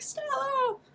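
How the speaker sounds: acted, very high, out-of-control, come-apart shriek. Retelling a scene with a baby chick, imitating Lorelai screaming. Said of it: "Lorelai loses it".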